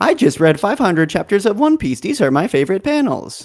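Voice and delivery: high, automated female text-to-speech narration voice. Suggesting a short One Piece video for kids, in the TikTok automated lady voice. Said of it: "you use the automated lady voice".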